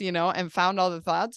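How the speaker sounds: plain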